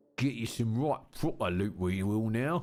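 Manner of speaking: put-on working-class British voice. A gamer voices a British crow character in a game, Victorian chimney sweep voice. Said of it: "Old school Victorian chimney sweep voice".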